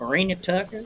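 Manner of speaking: put-on Southern twang accent. Saying a wrestler's name the way the Liberty Pro guy says it: Southern accent. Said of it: "I have to say with the Southern accent".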